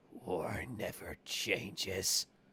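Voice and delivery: voice like a talking snake. Repeating a line to the others: snake voice. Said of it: "doing that in the snake voice".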